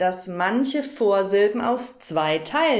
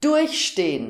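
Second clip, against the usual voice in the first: durchstehen with the first syllable durch stressed. German lesson on separable prefixes, stress on prefix durch. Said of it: "Hier wird die Vorsilbe betont und deshalb trennt man sie".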